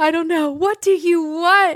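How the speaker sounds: put-on yelling. Recounting being asked what they want, the speaker re-enacts a yell from a meme. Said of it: "Sorry for yelling that in your car".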